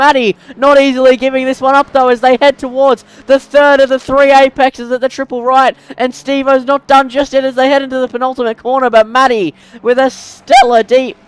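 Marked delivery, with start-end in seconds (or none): 8.9-11.1 voice cracks and breaks on the word deep. Commentating a close race as it nears the finish, voice cracks. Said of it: "What a voice crack".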